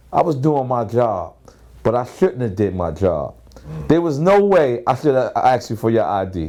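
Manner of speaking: ordinary delivery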